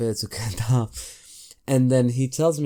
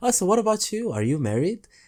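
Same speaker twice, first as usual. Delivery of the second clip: high, pointed, passive-aggressive tone; 9 semitones higher than usual. Retelling turning a question back on a man, retelling a passive-aggressive question. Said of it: "in the most passive aggressive tone".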